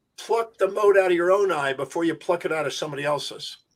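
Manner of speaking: plain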